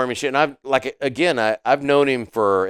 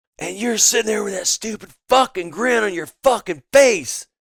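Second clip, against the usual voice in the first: put-on, high, enraged, furious screaming tirade; 8 semitones higher than usual. Telling how you and your friend Mo made each other grin, act it out, imitating Bay screaming. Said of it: "screaming at me like I'm a child".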